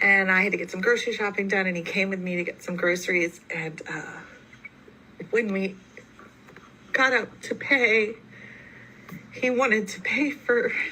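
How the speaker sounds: weeping, tearful voice, crying while speaking. Telling about a man who wanted to pay for the family's groceries, crying. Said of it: "why am I crying?".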